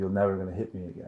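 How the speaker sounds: usual speaking voice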